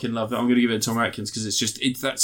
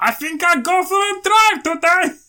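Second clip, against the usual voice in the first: fake German accent, very high and loud; 6 dB louder than usual. Describing sniping an enemy in a video game, voicing the enemy: bad German accent. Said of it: "That's my German accent".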